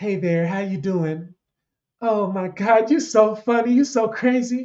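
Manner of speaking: slow, drawn-out, feminine-sounding voice. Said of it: "That's how [name] would talk".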